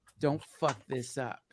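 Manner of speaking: stage half-whisper, voice kept on. Retelling what Joe half-whispered right before going on stage: imitating Joe half-whispering. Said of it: "leans in and he whispers".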